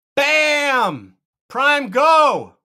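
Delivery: very loud, very high, booming, high-energy hype. Introducing the next product: very loud, energetic. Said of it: "Very loud today".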